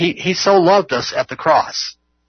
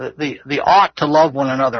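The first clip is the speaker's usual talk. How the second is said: the word ought strongly stressed. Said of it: "The also stresses the word ought".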